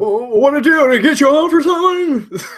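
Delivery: loud, high-pitched put-on voice. Talking about Eight Millimeter, doing a Nicolas Cage impression. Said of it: "That's my Nicolas Cage impression".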